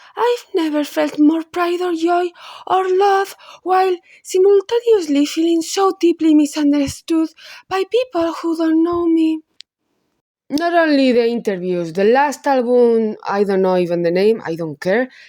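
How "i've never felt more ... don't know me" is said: put-on high preppy-girl voice and accent. Reading aloud a quote from an interview, preppy girl accent. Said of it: "what accent is doing now?".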